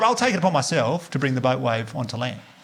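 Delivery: ordinary delivery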